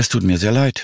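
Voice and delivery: with a sigh. A doctor tells of a patient's death after a heart attack, sighing. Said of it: "seufzte die Ärztin".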